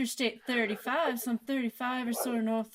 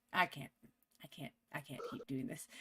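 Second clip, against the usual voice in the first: ordinary delivery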